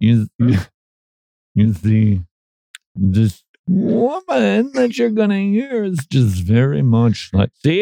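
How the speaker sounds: guru-style voice with words drawn out. Introducing a clip the listeners are about to hear: Deepak Chan impression. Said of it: "I got a little Deepak Chan going on right there".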